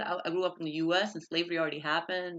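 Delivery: ordinary delivery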